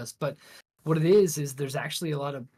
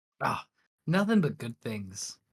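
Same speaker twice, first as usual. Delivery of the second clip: sarcastic, swooping, sing-song voice with heavy irony; 2 semitones lower than usual. Answering what is going on with Nintendo: sarcastic. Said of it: "he said, sarcastically".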